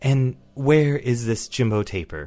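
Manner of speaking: slow, enchanted, automated dial-tone phone voice. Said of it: "and it says".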